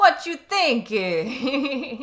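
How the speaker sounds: hammy, cheesy, very loud New York accent. Showing how a fake accent sounds: cheesy new york accent. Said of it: "the cheesy version of the New York accent".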